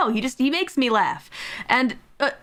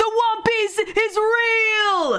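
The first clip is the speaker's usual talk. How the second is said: high, slow, drawn-out dying scream. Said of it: "he screams".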